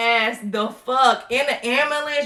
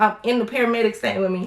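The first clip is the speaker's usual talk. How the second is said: normal talking voice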